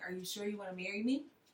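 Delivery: soft, hushed half-whisper. Retelling what the boyfriend said on the bench during the photo shoot: imitating him half-whispering. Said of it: "he whispers, he's like".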